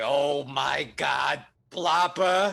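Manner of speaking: seething with rage. Storyteller voicing Trevor as he goes into a rage at Plopper, enraged. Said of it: "as he goes into a rage".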